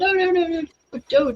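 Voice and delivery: very high-pitched, put-on Belgian accent. Retelling a Belgian man's reaction to damaged hair: imitating a Belgian accent. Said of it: "with his accent".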